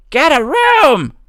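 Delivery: high, slow, loud put-on shout.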